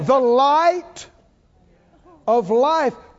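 loud, carrying shout, calling out. Addressing the house and asking if they're listening, shouting. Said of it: "why I'm shouting at the house".

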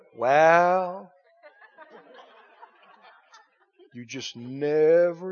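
solemn, hushed, pious reverent voice, very slow. Mocking how people quote a saying, the speaker does a put-on religious voice. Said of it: "people put on their religious voice".

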